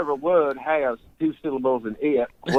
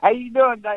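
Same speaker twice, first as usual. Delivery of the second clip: eastern Tennessee accent, upper lip held still, very high; 10 semitones higher than usual. Describing how folks from his family's eastern Tennessee home talk, eastern Tennessee accent. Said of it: "They talk like this".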